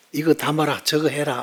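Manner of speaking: broad, thick Gyeongsang dialect. Retelling how a sister spoke while buying dishes, in thick Gyeongsang dialect. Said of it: "좀 억센 경상도 사투리로".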